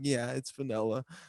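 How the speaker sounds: soft, nervous, frightened voice. Retelling how a stranger questioned a friend about his ice cream: imitating Andreas's scared reply. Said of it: "He was so scared".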